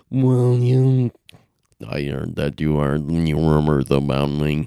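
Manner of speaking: deep nasal raspy put-on voice.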